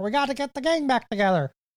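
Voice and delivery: cartoonish frog puppet voice. Comparing a movie plot to the Muppet movie: Kermit the Frog voice. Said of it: "That was my chance to shoe in the voice".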